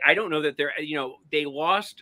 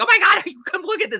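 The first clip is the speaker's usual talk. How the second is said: very high-pitched, loud scream; 8 dB louder than usual. Retelling calling to their sister to come look: retelling own screaming. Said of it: "I kept like screaming like".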